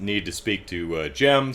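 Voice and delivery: ordinary talk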